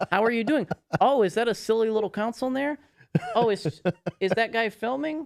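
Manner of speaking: overly polite, mocking voice. Retelling how store staff greeted him: imitating fake-friendly GameStop staff. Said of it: "they would start being so fake".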